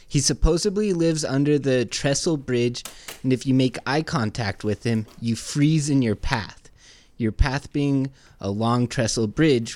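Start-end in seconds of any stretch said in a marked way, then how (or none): none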